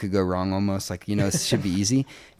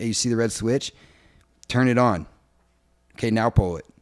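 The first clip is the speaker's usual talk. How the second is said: mock fed-up, angry, annoyed step-by-step delivery. Retelling telling the crew how to start the generator: retelling own angry words. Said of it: "I'm all pissed off".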